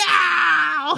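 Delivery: acted dismayed yell, very high, creaky, rough, drawn-out. Describing how she reacted as a character was about to die, imitating someone yelling no. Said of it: "She started yelling".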